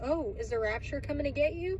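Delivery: ordinary delivery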